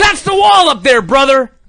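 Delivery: bellowing, yelled wrestling-announcer style call-out. Quoting a man yelling at a wall far away, retelling Hulk Hogan's yell. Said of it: "he's yelling at him".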